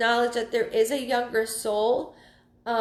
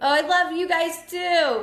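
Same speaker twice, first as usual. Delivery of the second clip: loud, high, drawn-out yell; 5 semitones higher, 4 dB louder than usual. Told that a friend's mom and cousin are watching, the speaker answers them, yelling. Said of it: "I don't know why I'm yelling".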